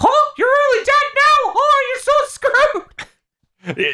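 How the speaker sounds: squeaky cartoonish laughing voice. Retelling an anime villain's lines: Mickey Mouse laughing fit. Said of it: "he sounds like Mickey Mouse having a laughing fit".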